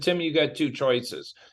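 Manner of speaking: plain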